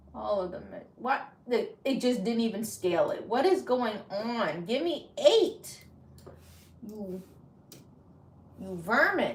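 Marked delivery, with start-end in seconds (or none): 3.2-9.3 frustrated, worked-up, upset scolding, slow. Scolding the Cricut for not scaling the design: getting upset. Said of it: "I'm getting upset".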